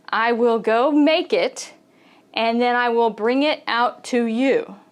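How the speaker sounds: usual speaking voice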